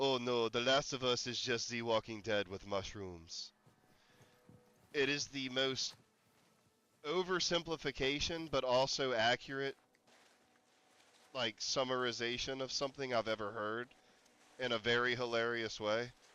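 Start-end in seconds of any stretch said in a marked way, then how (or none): 0.0-3.5 cool little put-on French accent. Quoting someone's remark from a show, doing a Frenchie imitation, French accent. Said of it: "I'm going to do my best Frenchie imitation here".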